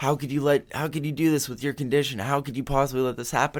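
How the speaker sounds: very high-pitched, shrill yell. Retelling how the doctor yelled at him after he woke: imitating a doctor yelling. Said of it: "She's like".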